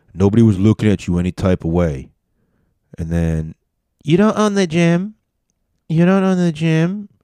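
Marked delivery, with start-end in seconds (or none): 4.0-7.1 put-on female voice, very high. Retelling an argument at a gym between a man and a woman; imitating a woman's voice. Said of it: "her voice in this voice".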